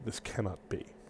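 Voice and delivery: very quiet, hushed whisper beneath the breath. A narrator reads a woman's words spoken beneath her breath: hushed, beneath her breath. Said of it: "speak in a hushed, quiet voice beneath her breath".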